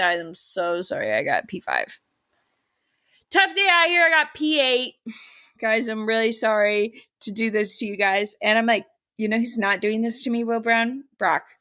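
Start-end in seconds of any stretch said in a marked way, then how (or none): 0.0-8.4 slow, sorry-sounding, every word drawn out. Imitating a driver who apologizes after every race: imitating Will Brown's apologetic tone. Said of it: "he's been like".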